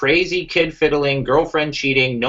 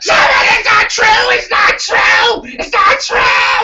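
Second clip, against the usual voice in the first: put-on scream, much higher and louder; 6 dB louder than usual. Recounting a chat where Keemstar kept interrupting, imitating Keemstar screaming. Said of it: "I don't have to scream over someone".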